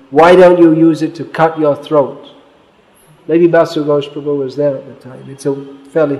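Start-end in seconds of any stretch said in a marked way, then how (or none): none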